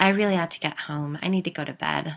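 ordinary delivery

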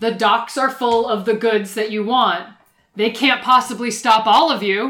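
very loud bellow. In a tabletop game, a player's character shouts to a crowd, magically booming yell. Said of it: "cast Thaumaturgy on myself to make my voice boom 3 times as loud".

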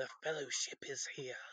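sly, snake-like small voice. Retelling a book scene where the Denarian recognizes the tattoos, in a snaky little voice. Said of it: "you just get that snaky little voice of like".

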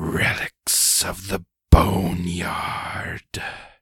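hissed words. Narrating a story, the speaker gives a woman's line, hissing. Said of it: "she hisses".

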